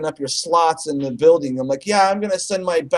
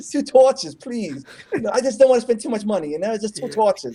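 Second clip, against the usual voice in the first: put-on New York accent, higher; 5 semitones higher than usual. Asking for two torches again, doing a Woody Allen voice. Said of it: "because Woody Allen sounds like one of those guys".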